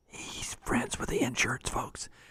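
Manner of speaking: very quiet, hushed whisper. Repeating the previous point as an aside, whispered. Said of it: "I'll whisper that for you".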